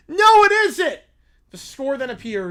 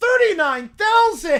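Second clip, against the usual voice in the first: higher-pitched cartoon child voice; 8 semitones higher than usual. Showing how a figure should be read, in a Charlie Brown Christmas special voice. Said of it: "You have to read it like Caillou or uh, like Charlie Brown in the Christmas special".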